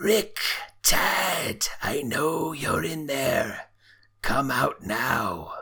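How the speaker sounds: raspy voice calling out. Narrator voicing someone calling in from the front door: raspy voice. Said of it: "you hear a raspy voice call out".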